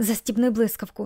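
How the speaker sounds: plain reading voice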